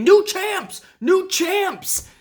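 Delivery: very high-pitched, repeated screaming. Retelling a commentator's call on a match: imitating Samoa Joe screaming. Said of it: "Samoa Joe is over there screaming".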